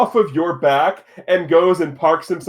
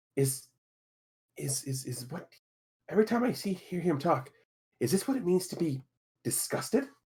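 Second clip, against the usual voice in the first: barely audible, reluctant whisper; 14 dB quieter than usual. A reluctant character climbs into a bag and speaks to a player; whispering. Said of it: "reluctantly gets in the bag and whispers to you".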